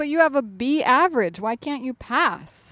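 ordinary delivery

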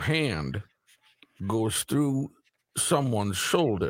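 mock, slow, drawn-out grandstanding floor-speech cadence. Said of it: "You got the pacing down".

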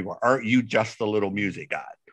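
very snotty, stuck-up, snooty voice. Retelling what a woman said after checking the record, imitating a snotty voice. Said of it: "in a real snotty voice".

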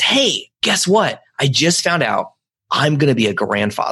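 excited, thrilled voice. Retelling a father telling church friends, imitating an excited dad. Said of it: "he is so excited".

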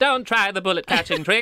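put-on old magician voice. Reading a letter from magician Harry Keller aloud: Harry Keller voice. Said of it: "I assume this man would sound like this".

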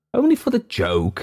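somewhat eager, urging, very high voice. Narrator reading Hurst's reply to another man among gentlemen, eagerly. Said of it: "said Hurst somewhat eagerly".

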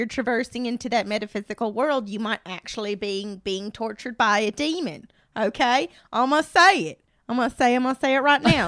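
put-on Southern accent. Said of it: "Lee's using a Southern accent".

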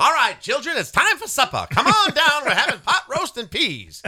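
put-on high, swooping, old-movie mid-Atlantic accent. Talking about old home movies, a speaker imagines a 1950s parent, mid-atlantic accent. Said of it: "mid-Atlantic accent".

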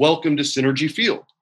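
plain

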